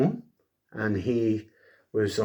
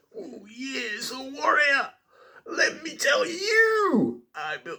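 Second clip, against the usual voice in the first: very high, slow, swooping voice, stretched out. Retelling what Randy Savage said to the Ultimate Warrior: Randy Savage impression. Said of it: "I can't do his voice, it really hurts my throat".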